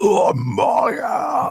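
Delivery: outright shrill scream, pitched very high and loud. Voicing a creature that screams a name while attacking: screaming. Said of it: "just outright screams".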